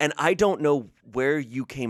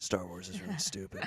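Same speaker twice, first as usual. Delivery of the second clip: mock muttering under the breath, lower and quieter; 4 semitones lower, 11 dB quieter than usual. Imitating an uncle who mutters hot takes in the corner: imitating quiet murmur. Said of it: "he says it really quietly".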